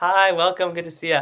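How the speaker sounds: voice with breath held back. Showing what flexing too much does, a speaker demonstrates a stopped-breath voice. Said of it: "you're going to stop your breath, and that's like this".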